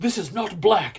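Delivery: put-on angry Italian accent. Retelling a man hitting the wall: imitating Valerio's angry Italian accent. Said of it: "Like, pissed".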